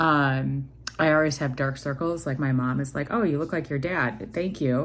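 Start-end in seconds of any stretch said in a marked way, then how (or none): none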